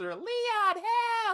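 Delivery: squeaky, very high-pitched whine. Complaining about an annoying game character, mimicking her in a whiny Ashley voice. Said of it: "her whiny voice".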